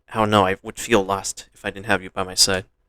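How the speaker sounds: plain reading voice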